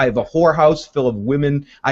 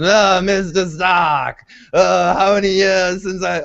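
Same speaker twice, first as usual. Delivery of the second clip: put-on strained old man voice, higher; 6 semitones higher than usual. Retelling a scene, quoting Grand Maester Pycelle greeting Mister Stark: imitating Grand Maester Pycelle. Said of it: "I won't keep that up, it hurts my voice".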